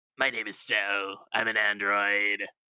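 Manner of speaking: deep, drawn-out, slow character voice. Showing a Cell voice from memory: imperfect Cell voice. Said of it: "do his voice a bit better".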